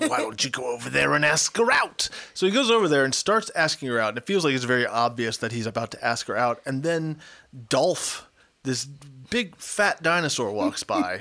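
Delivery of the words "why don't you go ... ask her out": put-on loose, half-done New York accent. Quoting a character's line while recapping a scene, in a vague New Yorker voice. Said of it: "the only voice that I know how to do, which is vague New Yorker".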